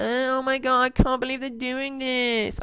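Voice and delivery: high, whiny, complaining put-on voice. Mocking own complaints about the game changes: put-on whiny voice. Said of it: "I know I'm sounding whiny".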